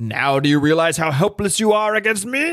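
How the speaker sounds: campy menacing frog puppet villain voice, comic alien style. Reading comic dialogue aloud, the speaker voices the villain, Super Skrull voice. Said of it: "This is my Super Skrull voice".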